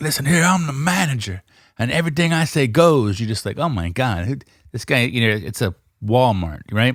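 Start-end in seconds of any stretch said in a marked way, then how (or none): 0.0-3.2 self-important, power-mad store manager voice. Retelling what a store manager says, imitating a power-mad manager. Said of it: "this guy's all power mad".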